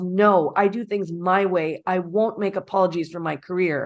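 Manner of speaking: ordinary talk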